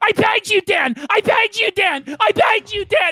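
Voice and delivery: acted-out, high, frantic, desperate repeated screaming. Speaker acts out a man freaking out at the end of an episode, retelling a desperate scream. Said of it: "He's just screaming".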